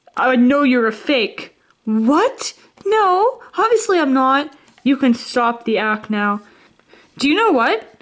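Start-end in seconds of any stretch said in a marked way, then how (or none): 0.2-1.6 angry, upset voice. Confronting an employee suspected of being an imposter, upset. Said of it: "Of course I'm upset".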